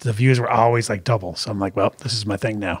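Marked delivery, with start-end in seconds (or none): none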